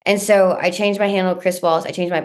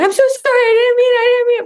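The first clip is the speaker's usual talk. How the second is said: mock panicked freak-out, much higher, louder; 6 dB louder than usual. Retelling how the woman who took the speaker's username apologized, imitating someone freaking out. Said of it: "freaking out".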